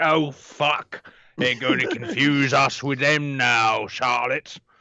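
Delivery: mocking put-on posh upper-class voice. Retelling how the rich folk reacted to the common folk: imitating posh rich folk. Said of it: "the rich folk were like".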